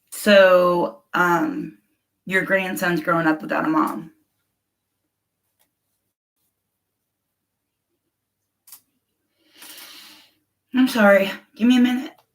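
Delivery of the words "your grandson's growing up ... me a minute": voice choking up, close to tears. Responding to another person's story, close to tears. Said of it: "I'm about to cry".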